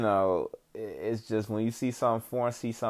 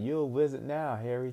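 put-on British movie-style English accent; 3 semitones higher, 3 dB quieter than usual. Recalling a woman who spoke that way, the speaker imitates her Harry Potter-movie British accent. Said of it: "speak like she was in a Harry Potter movie".

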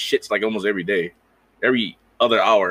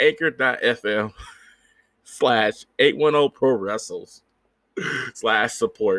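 laughing, cracking up mid-sentence; 2 semitones higher than usual. Reading out a support link for the podcast, laughing while talking. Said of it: "I can't stop laughing".

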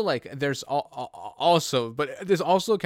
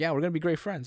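ordinary talk

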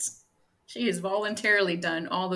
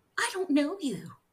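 mock overacted delivery, higher; 9 semitones higher than usual. Retelling how she said the line to him: imitating bad acting. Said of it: "She says it in a way that's, like, acting, like, bad acting".

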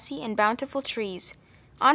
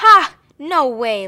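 line laughed out, very loud; 4 semitones higher, 10 dB louder than usual. Narrating, a character with sharp teeth answers a request to play: laughing. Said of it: "laughed One-Eyed Charlie".

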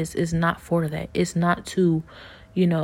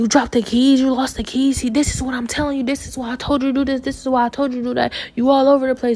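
furious, angry, high-pitched scolding with cursing; 7 semitones higher, 4 dB louder than usual. Retelling how dad cursed the speaker out over lost keys: imitating dad angrily cursing out. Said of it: "he's cursing me out".

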